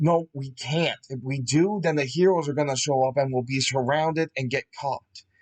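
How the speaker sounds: plain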